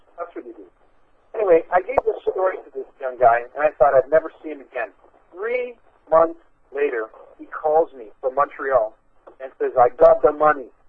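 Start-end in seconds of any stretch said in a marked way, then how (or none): 9.8-10.6 put-on big, heavy, thick French accent. Retelling a young man's phone call from Montreal, in a thick French accent. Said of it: "with a big, thick French accent".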